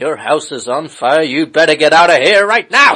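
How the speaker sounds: very loud, bellowing superhero voice. Joking with another speaker about which Batman impression a man was doing, Adam West Batman impression. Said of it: "the Adam West Batman impression".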